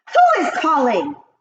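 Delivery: sharp, shrill, snapping witch voice. Reading a story aloud, the Grand High Witch asks who calls: snapping. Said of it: "snapped the Grand High Witch".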